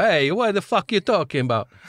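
high, put-on Italian accent. Acting out the other side's reply in a diplomatic incident, in an Italian accent. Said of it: "Italian one that you've ever done".

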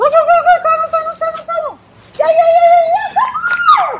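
thrilled cheering, very high, loud and excited. Training a dog to run through the tunnel: excited voice. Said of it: "do you guys see the excitement in my voice".

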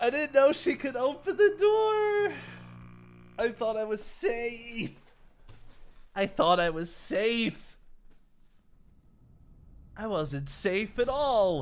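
high, teary, stretched voice, on the verge of crying. Gamer pleading not to be sent all the way back, near tears. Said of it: "I'm gonna cry".

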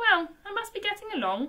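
very high, uneasy, rather nervous voice. A man takes his leave of a stranger, rather nervously. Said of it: "said the man, rather nervously".

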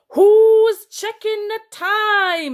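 panicky, very high, very loud, booming roar. Reading a story aloud, the narrator voices a giant's line, roared. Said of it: "it roared".

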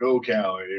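ordinary delivery

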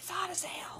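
hushed, very quiet whisper. Retelling what she said in the hot kitchen, quoting her whisper. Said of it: "And she whispered".

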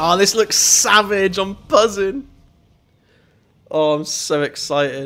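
fired-up, excited shouting, bursting with energy. Starting a Need for Speed game, shouting into the microphone with excitement. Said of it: "I keep shouting in the microphone".

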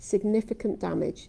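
strong stress on SIGNIFICANT.

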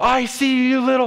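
mock shouting. Retelling how the homeowner sprinted toward them, imitating someone shouting. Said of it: "he starts shouting".

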